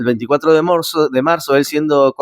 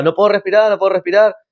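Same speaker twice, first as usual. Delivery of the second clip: shout, much higher, slower; 4 semitones higher than usual. Speaker recounting being held by the police, retelling a shout. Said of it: "Entonces yo gritaba".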